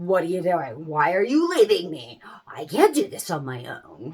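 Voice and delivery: sounding completely bewildered. Speaker voicing a child whose parent walks away, imitating a bewildered baby. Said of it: "they just look at you completely bewildered".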